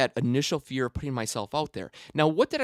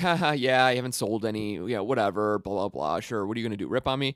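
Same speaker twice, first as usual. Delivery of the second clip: put-on laughter, dismissive, words running together without pause; 4 semitones lower than usual. Retelling own reply to coworkers asking about the invention: imitating own laughing reply. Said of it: "I started laughing like".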